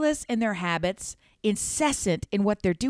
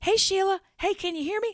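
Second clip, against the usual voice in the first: put-on shouting, very high and loud; 11 semitones higher, 6 dB quieter than usual. Describing someone on a loud FaceTime call, imitating someone yelling. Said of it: "Starts yelling".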